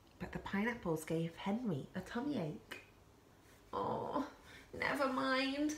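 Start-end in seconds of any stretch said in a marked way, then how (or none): 3.7-5.7 said with a groan. Reading a story, the narrator voices a penguin with a tummy ache, groaning. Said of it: "groaned Henry".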